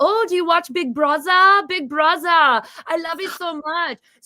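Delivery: terrible put-on German accent, pitched high. Quoting a german exchange student from high school: terrible german accent. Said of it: "which is a terrible German accent".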